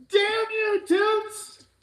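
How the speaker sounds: shrill, very loud, high-pitched yelling. Reacting angrily while watching with another speaker: yelling. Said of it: "sorry, I'm yelling".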